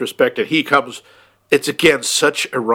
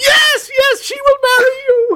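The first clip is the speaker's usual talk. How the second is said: put-on screaming, pitched very high and excited; 4 dB louder than usual. Speaker retells a woman accepting a proposal before Rachel does, retelling a scream. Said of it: "she just starts screaming".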